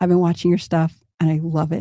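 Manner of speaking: put-on whispering voice. Retelling how an acquaintance hugged him and spoke: imitating someone whispering. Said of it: "she whispers".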